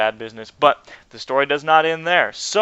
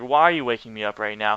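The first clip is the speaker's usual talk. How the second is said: mock cranky, irritated, pissed-off tone; 5 semitones lower than usual. Retelling being shaken awake at four in the morning: imitating own annoyed self. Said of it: "super pissed".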